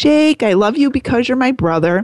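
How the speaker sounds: put-on high, small two-year-old girl's toddler voice. A parent retelling what the 2-year-old daughter said to her brother, imitating a 2-year-old girl. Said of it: "I'm not doing her a good 2-year-old voice now".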